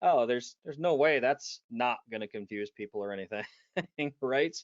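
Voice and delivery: fake, exaggerated sarcastic tone. Speaker recalls first hearing a product name, retelling a sarcastic remark. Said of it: "you can sense the sarcasm in my voice".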